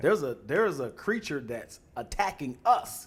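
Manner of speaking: normal talking voice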